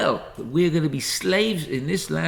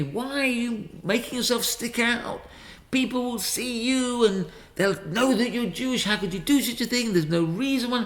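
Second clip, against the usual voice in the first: put-on heated, berating shouting; 6 semitones higher than usual. Speaker retells someone confronting them in front of their son, imitating someone shouting. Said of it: "he was shouting at me".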